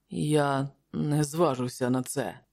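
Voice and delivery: quiet, softly spoken. The Stygian, wiping blood from his lips, answers Askalante, said quietly. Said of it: "тихо сказав стигієць".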